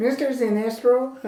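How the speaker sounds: high, terrified, clumsy, deliberately bad put-on voice. Riffing with a co-speaker on a comic-book scene, a bad impersonation. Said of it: "This is not a good impersonation".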